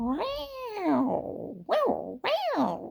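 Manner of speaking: high, swooping, drawn-out meowing tomcat voice. Retelling his dad's reaction when the nurse walked by, imitating a cat. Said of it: "he likes to sound like a cat sometimes".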